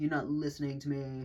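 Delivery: deliberately irritating, annoying-sounding mock voice. Complaining about someone, the speaker mimics what they say: imitating an annoying voice. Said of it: "they kind of sound fucking annoying".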